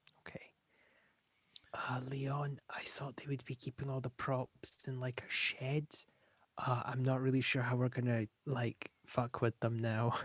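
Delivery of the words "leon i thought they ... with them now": hushed whisper, much quieter. The speaker addresses a fellow player about the props, whispering. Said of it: "obviously whispering".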